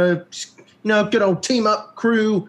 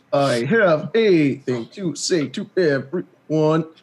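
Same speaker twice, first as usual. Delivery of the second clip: synthesized, robotic text-to-speech computer voice; 5 semitones lower than usual. Imitating another player's synthesized brain voice: imitating a synthesized computer voice. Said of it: "It sounds a lot like this".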